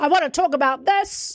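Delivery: loud, high, big voice projected far. Describing speakers who start strong then fade, showing their opening: projecting loudly. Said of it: "projecting really loudly for the first minute".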